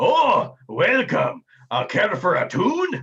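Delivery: rowdy, loud, sing-song, slow and swooping dwarf voice. Voicing a dwarf who greets players entering the room: boisterous Sweet Tunes Tuck voice. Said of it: "Sweet Tunes Tuck is a boisterous dwarf".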